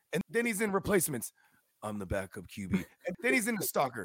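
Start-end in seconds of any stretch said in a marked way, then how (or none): 1.8-2.7 very low, level, flat deadpan monotone drone. Mocking an actor who plays the same guy in every movie, flat monotone. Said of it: "this monotone".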